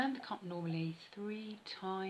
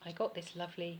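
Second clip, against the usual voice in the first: usual speaking voice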